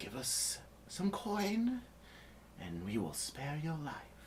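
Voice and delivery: soft, high, demanding half-whisper. A character holds cold steel to a man's neck and demands coin: half-whispering. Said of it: "she whispers".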